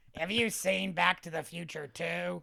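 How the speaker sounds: slow, rough, creaky, drawn-out puppet voice. Redoing the line after the other speaker asks if it's Cookie Monster: Oscar the Grouch voice. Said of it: "Is that Cookie Monster?".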